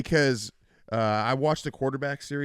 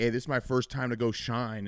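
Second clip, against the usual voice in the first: ordinary talk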